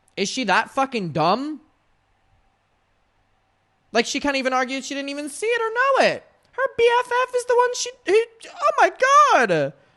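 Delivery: exasperated rant, very high and rising pitch. A speaker discussing a lawsuit grows annoyed, in an annoyed, high-pitched voice. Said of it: "My voice is getting so high because I'm annoyed".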